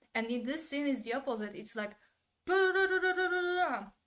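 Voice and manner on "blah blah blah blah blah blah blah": high, loud mock yelling without emphasis. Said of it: "Words are not emphasized".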